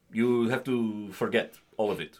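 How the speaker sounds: slow, stern Russian acting teacher voice. Retelling what a first-year acting teacher said: imitating a stern Russian teacher. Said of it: "this, like, very stern Russian woman, just being like".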